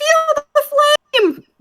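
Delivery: very high, shrill, loud shout. A player voices her character casting fire at the Grick, shouting the spell.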